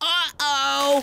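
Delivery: high, mild mock scream.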